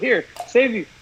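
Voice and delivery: ordinary talk, nothing marked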